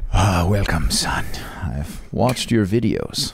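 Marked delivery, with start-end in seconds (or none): 0.1-1.3 put-on sleazy, scummy Latin lover voice and accent. Playing God in a role play, welcoming the other: scummy Latin lover voice. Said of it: "You sound like a scummy Latin lover".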